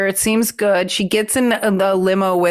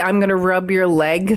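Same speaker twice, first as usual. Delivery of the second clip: plain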